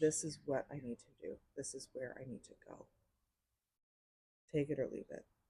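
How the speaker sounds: solemn, grave and earnest tone. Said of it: "It's just so solemn and serious".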